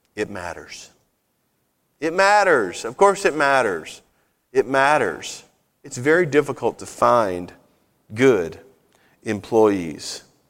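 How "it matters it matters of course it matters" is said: kindly, gentle, nicest possible soft voice. Retelling their reply to a job applicant about her background check, in the nicest voice. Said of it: "in the nicest voice I could".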